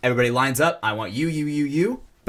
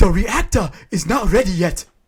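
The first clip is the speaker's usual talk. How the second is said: put-on heavy Nigerian accent laid on thick, slow, loud; 6 semitones higher, 6 dB louder than usual. Imitating a movie scientist from a clip: thick Nigerian accent. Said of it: "every scientist has that accent".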